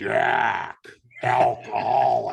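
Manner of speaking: permanent rough, creaky, whiskey-worn rasp. Recalling what an old biker used to say, imitating a whiskey voice. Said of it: "he had this like permanent whiskey voice".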